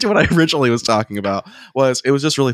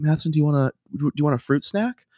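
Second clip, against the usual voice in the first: put-on toddler girl voice, higher; 2 semitones higher, 5 dB quieter than usual. Retelling what a little girl said to them, imitating a toddler girl. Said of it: "some horribly adorable debaucherous version of Matheson".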